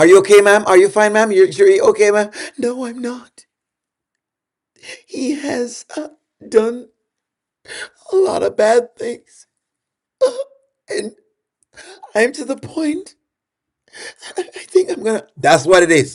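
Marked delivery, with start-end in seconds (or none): 2.6-15.3 tiny, soft put-on voice, unhurried. Acting out a woman calling 911 about a guy in the next room: little voice. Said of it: "she start in a little voice".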